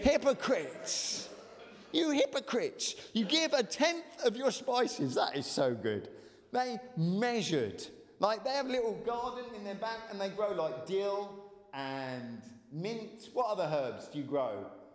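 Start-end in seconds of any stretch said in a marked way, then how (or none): 0.0-5.1 fervent, heartfelt, impassioned preaching, pitched up. Reading a scripture rebuke aloud to listeners, saying it with feeling. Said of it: "say it with feeling".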